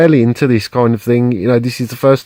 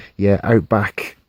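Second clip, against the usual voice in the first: lowered, hushed, secretive undertone; 3 semitones lower, 4 dB quieter than usual. Retelling what a guy at the counter said: imitating a lowered voice. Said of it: "and he lowers his voice".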